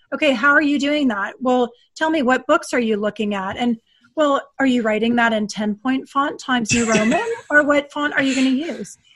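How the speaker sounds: snide, nitpicking, sarcastic tone. Acting out a leader getting into the weeds: imitating sarcastic questioning. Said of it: "just to be sarcastic".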